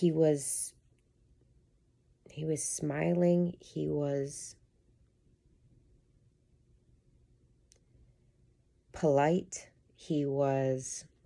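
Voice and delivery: holding back tears. Telling about working with an eighth grade boy last week, holding back tears. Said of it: "I'm gonna try to say this without crying".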